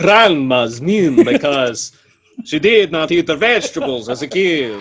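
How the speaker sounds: put-on vampire voice. Asked to repeat a sentence as a vampire, in a vampire voice. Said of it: "say it um as a vampire".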